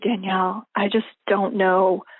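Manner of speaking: secretive, confiding tone, like sharing a secret. A speaker recalls a good friend who shut her office door, retelling his quiet, secretive tone. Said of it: "he said it quietly like this".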